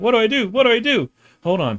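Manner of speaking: put-on panicked cartoon voice. Retelling a cartoon episode where a character swallowed a bug: Homestar Runner freaking out. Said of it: "he's freaking out".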